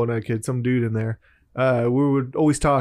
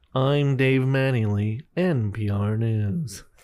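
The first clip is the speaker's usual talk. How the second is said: public radio announcer voice. Friends joke about sounding like NPR people; one does an NPR newsreader voice. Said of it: "the fucking NPR people".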